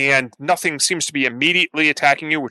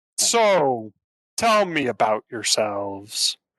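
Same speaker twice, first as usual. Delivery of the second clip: put-on monster voice, lower; 2 semitones lower than usual. Narrating a game, voicing the moss monster speaking to the players. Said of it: "the the moss monster say".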